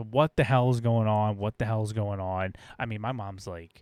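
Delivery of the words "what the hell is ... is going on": ordinary talk, nothing marked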